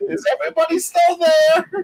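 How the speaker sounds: shrill, very high calling-out. Retelling falling off a chair and calling out to the others: imitating own past yell. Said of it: "laying on my floor yelling".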